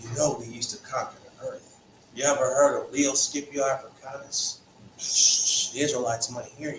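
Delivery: hushed, half-whispered stage whisper. Imagining descendants half-whispering about past conquests: imitating someone half-whispering. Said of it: "He doesn't need them whispering".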